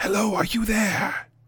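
disembodied spirit voice. Voicing a spirit in a medallion greeting a player: spirit voice from a medallion. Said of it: "you hear a voice again. And it says".

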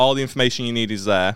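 ordinary talk, nothing marked

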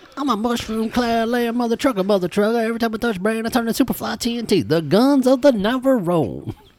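very high, full movie-star riff. Quoting a movie line after being asked: Samuel L. Jackson impression. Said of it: "Samuel L. Jackson now?".

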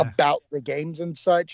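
normal talking voice

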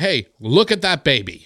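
tactless, careless, drawn-out, a little over the top. Retelling what his partner said about a baby, retelling a too-loud remark. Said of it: "she says a little too loud".

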